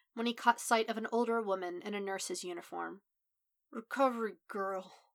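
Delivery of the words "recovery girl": slurred, slurring words. Narrator reading a man addressing an older woman in a nurse's uniform, slurred. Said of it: "he slurred".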